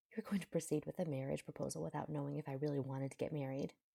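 plain reading voice

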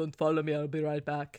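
put-on low, deep Austrian accent. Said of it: "like, a Schwarzenegger accent".

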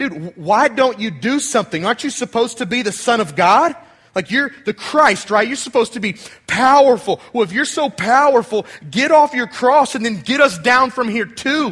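sneering, scornful, sarcastic mocking tone. Retelling how the thief on the cross mocked Jesus: imitating a sarcastic mocking thief. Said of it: "just really sarcastic".

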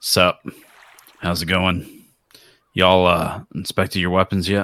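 rough, gruff put-on tough-guy voice. Playing a mercenary approaching soldiers: gruff guy voice. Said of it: "I tried to play, like, the, the gruff guy".

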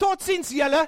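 high-pitched loud calling out. Retelling a friend turning to a family in a queue: imitating someone shouting loudly. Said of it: "he shouts out loud in front of everyone".

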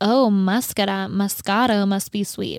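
ordinary talk

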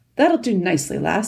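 ordinary talk

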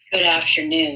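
grave, solemn, serious-voice tone. Returning the host's greeting on a show about a serious topic, serious voice. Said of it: "that's my serious voice".

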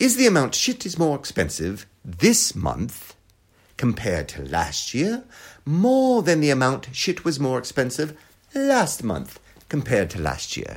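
bad, slow, swooping, sing-song posh English accent. Rephrasing a confusing question about expenses: bad Mary Poppins accent. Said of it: "Let me say it again with a Julie Andrews, like Mary Poppins accent".

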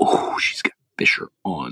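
low, hushed whisper. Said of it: "I was like".

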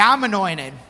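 sassy, with a bit of attitude. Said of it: "say it with a little bit of attitude".

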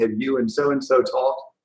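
ordinary talk, nothing marked

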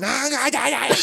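mock shrieking yell, very high-pitched. Retelling how she yelled at him after flying back off her stool, imitating a woman yelling. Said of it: "She's yelling".

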